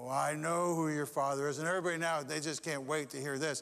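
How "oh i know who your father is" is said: big booming voice, slower. Retelling a church story, voicing the pastor as he booms out, booming voice. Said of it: "he booms out".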